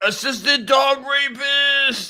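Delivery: very high, loud yell, final word stretched. Trying the entrance cry after being told to try it: yelling in character. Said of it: "I tried to yell like you".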